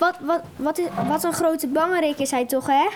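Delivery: ordinary talk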